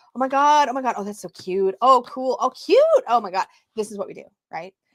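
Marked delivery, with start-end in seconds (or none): 0.1-3.4 acted, loud, giddy, excited gushing. Acting out how everyone reacts to opening a new deck: imitating gushing new-deck excitement. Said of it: "you do this business, right? You're like".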